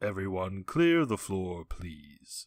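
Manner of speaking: dulcet, low, smooth put-on voice, very slow. Doing an impression of someone clearing the floor: Mister Carter impression. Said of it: "this was my impression of Mister Carter".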